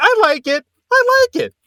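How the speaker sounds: very high, slow forced conviction. Imitating a performer talking herself into liking a haircut: imitating voice rising to convince herself. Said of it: "the way her voice goes up whenever she's trying to convince herself".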